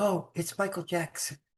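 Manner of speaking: very soft, hushed, soft-spoken voice. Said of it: "very soft voice".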